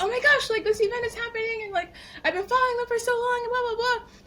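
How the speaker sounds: high, fast, excited gushing. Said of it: "I was so excited and I was like".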